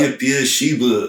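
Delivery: weak, poorly done put-on New York accent. Trying out a company name aloud, in a bad New York accent. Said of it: "why is your New York accent so bad?".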